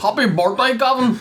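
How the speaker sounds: Northern Ireland accent. Asked by another speaker to wish Gavin happy birthday, Northern Irish accent. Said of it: "Do it in your Northern Ireland accent".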